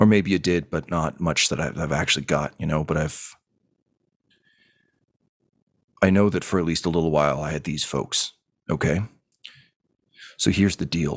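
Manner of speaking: muttering under the breath. Voicing a character in an elevator, speaking under his breath: muttering under his breath. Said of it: "he just kinda mutters".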